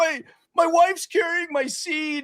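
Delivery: very high, drawn-out blubbering through sobs. Retelling hiding in a bar bathroom at a party: retelling own sobbing.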